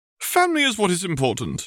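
grand, declaiming, very high-pitched, swooping. At a family gathering during a toast, a woman speaks to everyone, declaring. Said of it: "Walburga declared".

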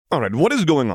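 insistent demanding tone. A son confronts his family, who have acted strange all evening: demanding. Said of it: "he demanded".

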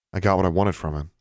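ordinary delivery

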